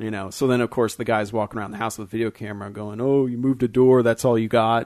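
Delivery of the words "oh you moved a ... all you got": loud, mocking, provoking, goading taunting tone. Retelling a man with a camera taunting a demon: imitating someone taunting a demon. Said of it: "he's talking shit to it".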